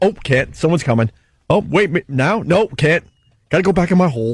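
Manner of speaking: jittery, nervous crab voice. Acting out a crab peeking from its hole: nervous crab voice. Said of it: "They're nervous Nellies".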